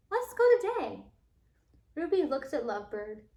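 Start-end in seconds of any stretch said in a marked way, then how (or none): 0.1-1.0 high, squawky bird voice. Reading the story aloud, the narrator gives Lovebird's line: squawky Lovebird voice. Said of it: "in a squawky voice".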